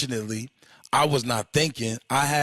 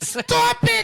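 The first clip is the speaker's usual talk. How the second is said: higher-pitched, put-on girlish voice; 4 dB louder than usual. Retelling a fight where a friend yells to stop: imitating Kenny, sounds like a girl. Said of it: "he sounds like a bitch".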